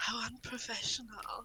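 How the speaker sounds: low whisper. Player character speaking so nearby people overhear, low whisper. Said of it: "I'll whisper like in a in a really like low voice".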